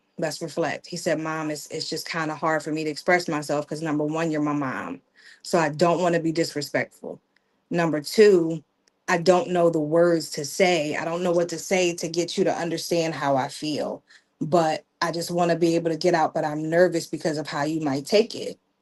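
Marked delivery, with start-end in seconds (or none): none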